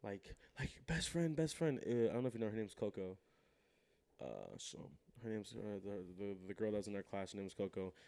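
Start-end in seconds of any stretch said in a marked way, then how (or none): 0.9-1.8 mock high, frantic girlish screaming. Retelling a girl bursting into class: imitating a girl screaming. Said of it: "some girl comes in screaming".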